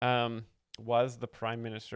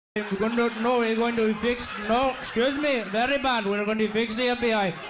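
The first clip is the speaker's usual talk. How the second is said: put-on Indian accent; 11 semitones higher, 6 dB louder than usual. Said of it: "We got great accent".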